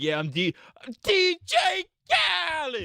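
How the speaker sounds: very high, showy, swooping sing-song announcer voice. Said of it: "he was like".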